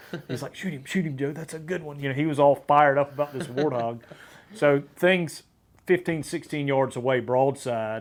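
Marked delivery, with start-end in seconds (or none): 0.6-2.0 hushed, put-on British accent. Retelling a warthog hunt, the speaker quotes another man in a British accent. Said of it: "in this British accent".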